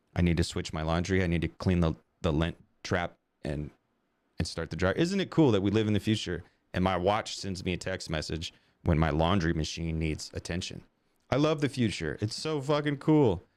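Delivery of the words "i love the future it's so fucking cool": sarcastic, fake enthusiasm, pitched high. Talking about a watch that texts about laundry: sarcastic fake enthusiasm. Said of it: "that's sarcasm".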